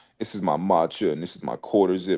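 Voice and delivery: mocking, put-on proper-sounding performative voice. Imitating people on social media performing with matcha, proper voice. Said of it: "talking in, like, a proper voice".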